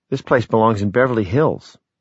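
ordinary delivery, nothing marked

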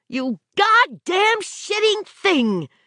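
exasperated, furious, very high-pitched, drawn-out outburst. A driver hears something break in the back and cries out in exasperated fury. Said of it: "she cried in an exasperated fury".

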